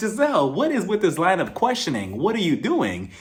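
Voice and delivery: ordinary delivery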